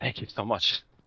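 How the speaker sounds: voice full of relief. Thanking the hosts after being congratulated on a win, relieved. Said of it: "You can hear the relief in his voice".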